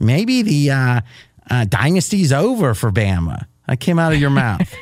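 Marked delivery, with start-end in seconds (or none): 0.0-3.5 slow, faintly put-on, disapproving, affected drawl. Repeating what the listener said in a production meeting, in a slightly affected mocking voice. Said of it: "I'm going to say it in a slightly affected voice to show my disapproval".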